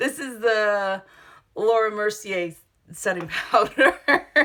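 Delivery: talking while laughing, giggling through the words. Naming a setting powder while applying makeup: laughing while talking. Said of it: "I'm just laughing because I'm silly".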